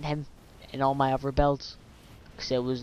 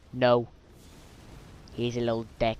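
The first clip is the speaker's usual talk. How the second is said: ordinary delivery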